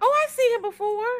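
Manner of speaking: sudden, high, surprised recognition.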